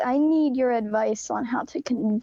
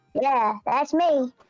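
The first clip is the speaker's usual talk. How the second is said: cartoon character voice. Answering someone on a call who asks for Butters, in a Butters impression. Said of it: "doing my impression of him".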